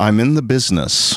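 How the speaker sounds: foreboding, weighty, cryptic ominous delivery. Retelling what a man answered when asked about being a rabbi, retelling an ominous line. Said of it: "all he said just very ominously is".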